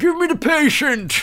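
shouted impression of a voice.

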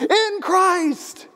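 jarring, very high-pitched, agitated sudden outburst. Recalling a class reading, the speaker repeats a student's line: retelling an agitated outburst. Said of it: "he was kind of getting agitated".

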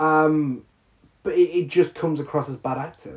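ordinary talk, nothing marked

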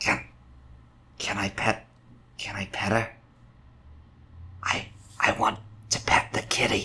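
hushed, soft whisper under the breath. [name] speaks to Zyra, whispering. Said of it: "They're just gonna whisper to Zyra".

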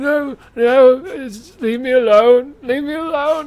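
put-on very loud, very high drunken sobbing wail. Speaker voices a creature throwing his hands up; drunken weeping. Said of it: "He's like drunkenly weeping".

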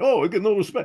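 very high comic voice. Asked by the other speaker for one, doing a Rodney Dangerfield impression. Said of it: "You Rodney Dangerfield".

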